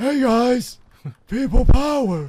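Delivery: very high, very loud, shrill, booming, slow, drawn out. Imitating someone shouting a catchphrase: John Laurinaitis impression. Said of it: "Like John Laurinaitis".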